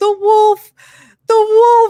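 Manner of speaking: put-on very high, drawn-out hysterical wailing sob. Retelling a son running into the bedroom: imitating a child bawling hysterically. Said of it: "came running into the bedroom bawling".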